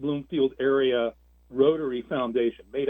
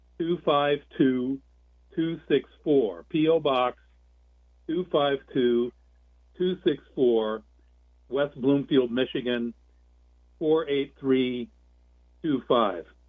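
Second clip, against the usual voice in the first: slow, deliberate dictation, pausing mid-phrase. Announcing the foundation's mailing address to contributors: reading slowly. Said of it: "I'm going to read it slowly".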